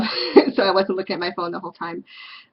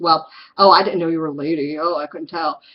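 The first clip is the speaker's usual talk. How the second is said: mocking, snide put-on voice; 4 dB louder than usual. Retelling a stranger's reply at a bar: imitating a mocking jerk. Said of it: "just being a real asshole about it".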